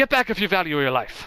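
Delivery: put-on threatening, menacing Scottish accent. Game narrator voicing the miller raising a club as players enter: Trumbell's Scottish accent. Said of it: "So I gave him a Scottish accent".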